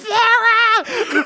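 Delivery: mock very high, drawn-out, panicked screaming cry. Recounting failing to save Flora, retelling a scream. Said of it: "I screamed at the top of my lungs".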